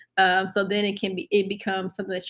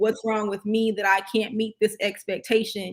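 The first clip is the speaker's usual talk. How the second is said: ordinary talk, nothing marked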